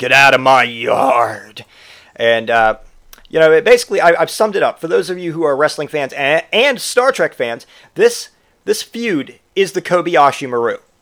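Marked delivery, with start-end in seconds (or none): 0.0-1.6 very slow, deliberate, every word dragged out. Comparing how someone sounds to a film role: Clint Eastwood voice. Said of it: "sounds like Clint Eastwood in fucking Gran Torino".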